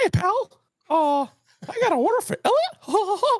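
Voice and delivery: very high pitch, sound stretched out long. Ordering at a Starbucks drive-through as his daughter asked, Mickey Mouse voice. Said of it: "Will you order like Mickey Mouse?".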